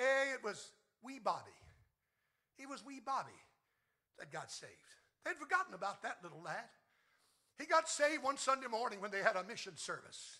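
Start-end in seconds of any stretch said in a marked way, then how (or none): 0.0-4.7 put-on sing-song Scottish accent, old preacher voice. Telling a joke, the old preacher answers the elder in a scottish accent. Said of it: "replied in his Scottish accent".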